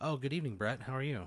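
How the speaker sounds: pleasant, friendly woman's voice. Voicing a woman answering a phone call: friendly woman's voice. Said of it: "a friendly woman's voice on the other end answers".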